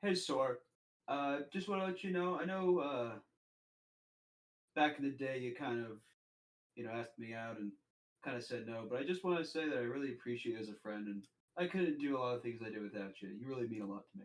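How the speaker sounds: very quiet, hushed, under the breath. In a role-play, speaking so the real listener can't hear, speaking really quietly. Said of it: "I say it really quietly".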